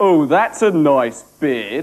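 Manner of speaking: loud, slow, deliberate, drawn-out delivery. Recalling his first words on being introduced, imitating Ray. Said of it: "being Ray, it came out as".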